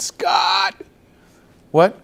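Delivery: very high, creaky, sugary but cross put-on yell. Retelling a mother yelling from the kitchen, sweet loud angry voice. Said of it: "in a very sweet, loud, angry voice".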